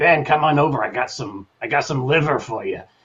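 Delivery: loud, raspy, rasping little voice. Describing the tiny aunt who looked after him in New York, imitating Aunt Blanche's raspy voice. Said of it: "raspy, raspy little voice, and you know, talking like this all the time".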